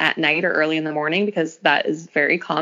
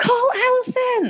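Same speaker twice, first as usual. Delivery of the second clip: put-on frantic, shrill, very high hysterical voice. Retelling her labor, a woman tells her husband to call the midwife: imitating hysterical panic. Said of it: "I was like hysterical".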